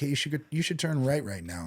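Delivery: cool, even-keeled radio voice. Describing a crisis when someone speaks over the comms, imitating a calm comms voice. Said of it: "that calm voice comes over the comms".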